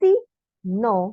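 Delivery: pause between sí and no. Explaining a formula, saying it with a pause between sí and no. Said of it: "lo digo con pausa para poder que se vea la separación".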